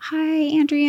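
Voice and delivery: very high, cutesy, put-on Italian accent. Retelling a woman greeting her on arrival, cute little Italian accent. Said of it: "in her cute little Italian accent".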